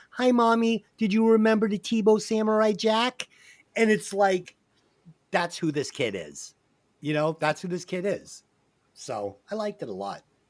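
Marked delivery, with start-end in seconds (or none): 0.2-3.3 put-on high little kid's voice. Retelling what a grown character says to his mother: little kid's voice. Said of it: "he says to her in this little kid's voice".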